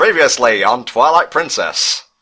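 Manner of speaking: put-on old-time radio announcer voice. Showing which voice just got used, Legend of Korra announcer voice. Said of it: "sound like the radio announcer guy".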